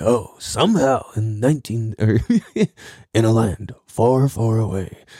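epic film-trailer narrator delivery. A podcaster jokes about sounding like the movie guy, doing a movie trailer narrator voice. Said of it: "I sounded like the movie guy".

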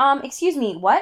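mock annoyed, pissed-off, high-pitched tone. Retelling how the character reacted when she got pissed: imitating an annoyed character. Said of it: "she gets, like, pissed. She's like".

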